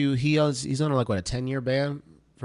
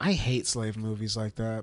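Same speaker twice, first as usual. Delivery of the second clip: normal talking voice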